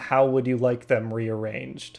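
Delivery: flat, level, expressionless deadpan delivery. A game master voicing a shopkeeper answering a player's request, deadpan. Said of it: "the shopkeeper looks at you like deadpan and says".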